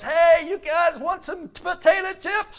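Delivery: high, loud yell.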